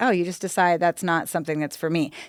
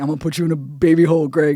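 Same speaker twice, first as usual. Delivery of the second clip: louder put-on threatening voice; 4 dB louder than usual. Retelling a threat to a showrunner: imitating Shaq's threat. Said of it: "he'd be like".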